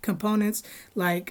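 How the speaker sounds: ordinary delivery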